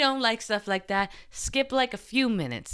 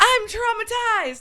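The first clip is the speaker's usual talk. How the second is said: very high, loud shrieking scream; 13 semitones higher, 6 dB louder than usual. Retelling running out of the room: imitating own scream. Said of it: "started screaming, running out of the room, screaming".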